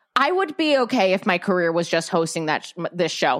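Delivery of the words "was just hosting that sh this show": ordinary talk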